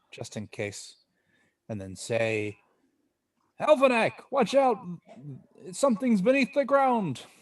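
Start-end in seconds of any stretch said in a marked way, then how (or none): 3.5-7.2 urgent, very high, loud shout. Calling out a warning in character with a magically louder voice: loud shout. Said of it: "increase th-, the loudness of my voice".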